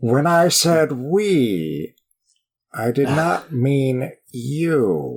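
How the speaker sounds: deliberate, very slow delivery with "we" stretched long. Quoting a movie line after praising the actor's voice: Riff Raff impression. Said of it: "That was a good impersonation".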